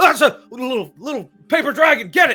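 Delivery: very high, frantic, panicked shout. Voicing a guard captain ordering guards after a paper dragon: freaking out. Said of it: "they're all just freaking out".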